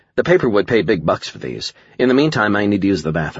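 ordinary delivery

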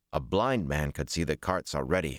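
ordinary delivery, nothing marked

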